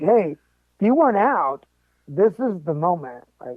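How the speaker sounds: ordinary delivery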